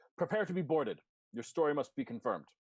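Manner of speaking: called out from afar, pitched high. Narrating a game scene, voicing the voice that shouts out again, shouting. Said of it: "the voice shouts out again and says".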